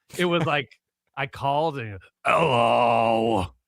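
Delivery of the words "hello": loud, drawn-out hello in a sick-sounding voice. Retelling a phone call to a sick co-host: imitating sick Harvey Fierstein voice. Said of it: "It sounded like Harvey Fierstein was sick".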